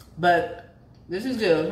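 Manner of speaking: talking with mouth full. Ending a recipe video while eating the baked chicken: talking with mouth full. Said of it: "I'm chewing my mouth full".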